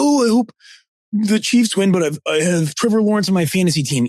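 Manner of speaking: derisive, high voice. Speaker mocks fans who root for fantasy players: mocking imitation of fantasy fans. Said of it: "And people who be like".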